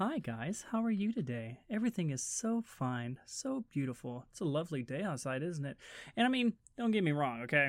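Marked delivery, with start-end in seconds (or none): 0.0-5.8 mock extremely nice, delicate voice. Retelling talking to a girlfriend's parents, imitating an overly nice, delicate voice. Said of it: "I was extremely nice and delicate".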